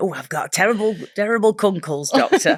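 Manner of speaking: sick, ailing patient voice, complaining tone. Joking that a word sounds like an illness: mock patient complaining to doctor. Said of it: "it sounds like a medical complaint".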